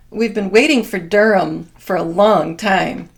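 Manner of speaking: loud, heavy, dripping sarcasm. Retelling what someone said on a show: imitating a sarcastic remark. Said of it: "very sarcastically".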